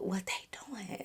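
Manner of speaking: put-on whisper. Retelling own question to him in a story: retelling a whisper. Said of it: "I'm all whispering and stuff".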